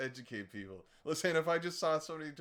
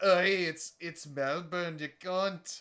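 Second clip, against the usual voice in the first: Scottish-accented voice; 3 semitones higher, 6 dB louder than usual. Joking about how to say Melbourne, the speaker talks in a put-on Scottish accent. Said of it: "I that's Scottish".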